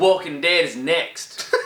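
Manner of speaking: slow, drawn-out southern accent.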